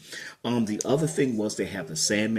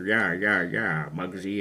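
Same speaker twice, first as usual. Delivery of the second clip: put-on old 1940s movie gangster voice, tough-guy. Describing old 1940s and 1950s films, imitating an old movie gangster voice. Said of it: "where you had the gangster say".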